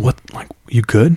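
hushed, quiet whisper. Retelling how a friend's older brother checks on his pale friend, whispering. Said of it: "He whispers".

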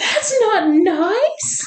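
very high, scandalised mom voice with stretched gasp. Retelling to someone what your mother said after he got off you, imitating her shocked voice. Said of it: "my mother said in a shocked voice".

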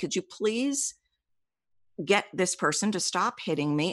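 mock meek, timid, frightened, terrified voice. Retelling asking someone to stop hitting her: imitating own timid plea. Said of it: "very timidly, I was terrified to say".

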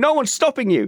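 acted-out screaming. Recalling watching a driver qualify fourth, retelling own screaming at tv. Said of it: "I'm like screaming at the TV going".

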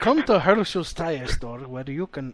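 put-on Russian accent with a commercial announcer delivery. Improvising a tire store commercial, speaker slips into a russian accent. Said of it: "Why am I sounding like a Russian?".

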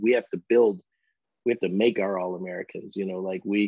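usual speaking voice

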